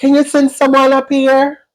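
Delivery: put-on voice, pitched very high.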